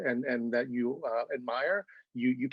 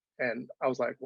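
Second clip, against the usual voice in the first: usual speaking voice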